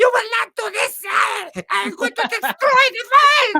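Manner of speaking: put-on maniacal German voice. Imitating an actor's maniacal little German villain voice. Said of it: "a maniacal little German voice".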